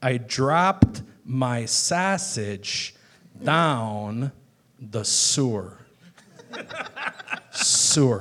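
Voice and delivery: put-on elocution-teacher Chicago accent, drawn out, falling. Retelling his riff about an elocution school teacher, in a chicago accent. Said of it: "the Chicago accent".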